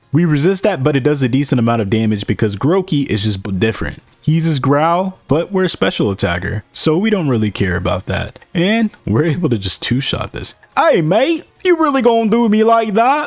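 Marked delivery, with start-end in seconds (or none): 10.7-13.2 put-on clumsy, failed British accent, pitched up. Voicing rival Hop in a Pokemon run: bad British accent. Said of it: "I cannot do a British accent".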